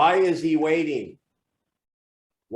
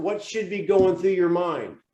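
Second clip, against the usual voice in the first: plain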